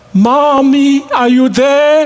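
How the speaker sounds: put-on small, high little-girl voice calling out. Telling of a little girl on a moving train calling to her mother, yelling in a small little voice. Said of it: "she would yell in a small little voice".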